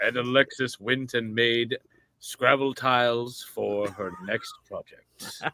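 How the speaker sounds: put-on deep narrator voice. Narrating a friend's life after a wish for Keith David: deep Keith David narrator voice. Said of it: "I can't go that deep".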